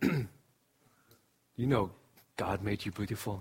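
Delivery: low, soft, gruff deep voice. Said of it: "He has a deep voice".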